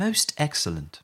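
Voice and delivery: put-on posh English accent. Asking a co-host to try a phrase, demonstrating it in a posh British accent. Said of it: "Say that in a posh British accent".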